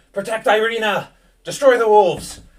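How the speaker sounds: very loud, high yell at full volume. Narrating a fight in a graveyard, the game master gives Ismark's call: yelling commands. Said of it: "Ismark yells".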